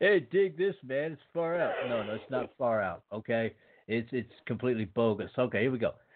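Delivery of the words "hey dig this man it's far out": high, put-on, groovy sixties hippie voice. Reading newspaper headlines, the speaker breaks into a hippie voice. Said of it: "I sound like a hippie".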